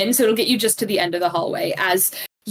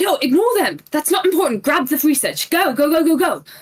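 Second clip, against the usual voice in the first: urgent, high-pitched shouting; 6 semitones higher than usual. Narrating the game as a figure moves toward the entrance: Professor Netherglim shouting. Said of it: "Professor Netherglim just shouts".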